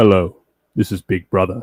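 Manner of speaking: deep, low, booming voice. Trying out a deeper voice for Big Brother; deeper Big Brother voice. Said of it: "Does that sound does that sound deeper?".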